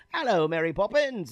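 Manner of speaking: high, put-on Hollywood-style English accent. Joking with guests about how Americans imitate English accents, Mary Poppins English accent. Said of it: "every American's English accent is".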